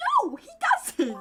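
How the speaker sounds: indignant, protesting tone. Protesting right after someone agrees with a point, indignant outburst. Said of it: "my voice got real bad there".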